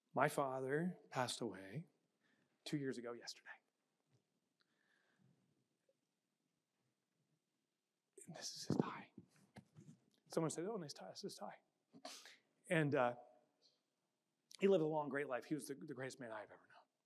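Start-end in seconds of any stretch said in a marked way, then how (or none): 0.1-9.0 on the verge of tears, slower. Speaking to an audience after warning they may start crying, on the verge of tears. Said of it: "And here I go".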